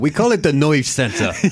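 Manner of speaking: put-on over-the-top, thick New York accent. Speaker quoting a film character's line, in a Walter Matthau New York accent. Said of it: "i loved his new york accent when he's, he's like".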